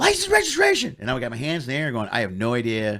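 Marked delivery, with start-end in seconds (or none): 0.0-1.0 high, loud screamed delivery. Retelling a man walking up to the car, imitating him screaming. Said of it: "screaming at me".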